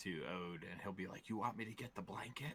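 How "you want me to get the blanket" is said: hushed, half-whispered aside under the breath. Voicing a character half-whispering under his breath to a companion: half-whispering in character. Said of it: "Cornelius will whisper under his breath".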